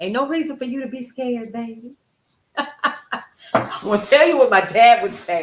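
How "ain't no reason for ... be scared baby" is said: warm motherly voice, like a mom. Speaker rallies listeners, echoing how their mother talks, imitating own mother. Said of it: "I sound like my mother".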